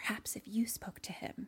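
hushed, breathy whisper. Retelling a movie scene where a character whispers to someone: imitating a whisper. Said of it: "she's, like, whispering to someone".

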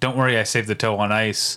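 ordinary talk, nothing marked

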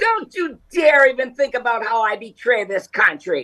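high-pitched defiant tone. Imitating Jenny Thomas defiantly: Jenny Thomas voice. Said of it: "Is that Jenny Thomas's voice?".

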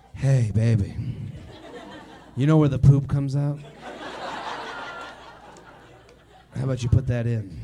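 whispered, breathy, fake seductive tone. Joking about a mid-hookup request: mock sexy voice. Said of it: "I was trying to be sexy with it".

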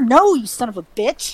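plain

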